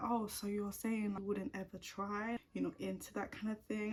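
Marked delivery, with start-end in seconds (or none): none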